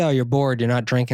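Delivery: ordinary talk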